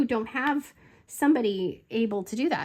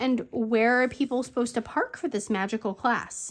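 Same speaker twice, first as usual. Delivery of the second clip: usual speaking voice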